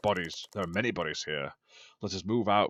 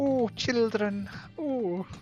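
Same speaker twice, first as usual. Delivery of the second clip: put-on old nanny voice, much higher pitch. A streamer, joking about badly dubbing games, does a Mrs. Doubtfire voice. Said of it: "I'll end up doing like Missus Doubtfire voice".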